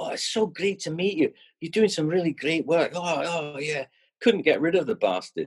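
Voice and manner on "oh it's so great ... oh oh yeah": high, over-friendly, chummy gushing. Retelling how a new acquaintance gushed: imitating chummy gushing. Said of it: "he was like my best mate".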